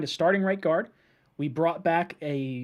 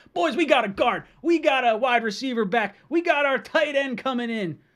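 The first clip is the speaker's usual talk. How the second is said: hyped, excited yell, swooping and drawn out; 8 semitones higher, 4 dB louder than usual. Reacting to the team's new signings on the stream: yelling excitedly. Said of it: "I'm just yelling into a microphone right now".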